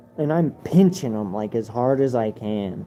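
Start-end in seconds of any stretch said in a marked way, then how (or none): none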